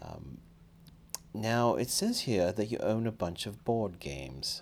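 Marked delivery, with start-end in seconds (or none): 1.3-4.6 higher, slow, fake non-American accent. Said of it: "I don't know what that accent is".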